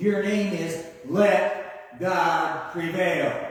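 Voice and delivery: put-on sarcastic tone. Retelling what God says when renaming Jacob: acting out a sarcastic line. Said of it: "God's being a little bit sarcastic here".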